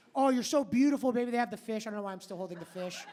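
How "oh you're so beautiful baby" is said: sugary, sweet, flattering sweet-talking voice. Mimicking men with fish pictures flattering a woman: imitating sweet flattery. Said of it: "they start off very nice".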